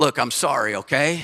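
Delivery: cool, detached, defensive, impersonal tone. Speaker illustrates an impersonal, defensive apology, in a cool tone. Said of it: "In a cool tone".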